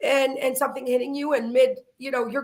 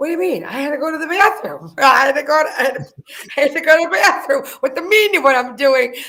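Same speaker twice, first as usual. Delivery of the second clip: put-on loud, rambling drunk woman's voice; 6 dB louder than usual. Retelling what a drunk woman told a cop: imitating a drunk woman. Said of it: "she was drunk. So she's like".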